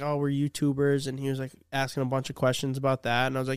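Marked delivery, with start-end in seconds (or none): none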